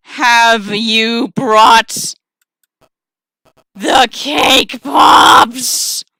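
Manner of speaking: loud, grinding, grating spider creature voice. A narrator voicing a spider questioning the listener, grating, low spider voice. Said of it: "voice grating and low".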